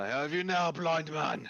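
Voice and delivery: very high, shrill, loud gloating voice. Voicing a guard striking at a blind man: NPC guard taunting. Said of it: "This guy's like".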